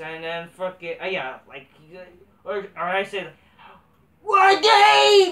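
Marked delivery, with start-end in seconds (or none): 4.2-5.3 squeaky, shrill, high, loud squealing yell. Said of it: "Like that, let's just say, let's say it like that".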